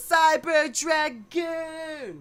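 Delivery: loud, high cartoon yell, "dragoon" stretched out. Recalling the first season of a show, doing the Beyblade cartoon voice. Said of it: "that was my best impression of a cartoon voice".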